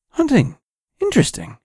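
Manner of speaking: strangely enthusiastic voice. Reading a story aloud, the hitchhiker reacting to hunting: strangely enthusiastic tone. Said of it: "in a strangely enthusiastic tone".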